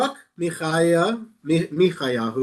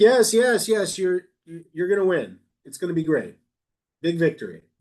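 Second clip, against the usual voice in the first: play-acted scornful, insincere, mocking sarcastic tone. Retelling how a man mockingly says what he's been told: retelling a mocking reply. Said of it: "he mockingly says what he's been told to say".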